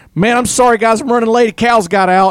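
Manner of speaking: frantic, harried, hustling outburst, very high and loud. Retelling a late man arriving with keys to open the airport: imitating a frantic man. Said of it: "He's all frantic".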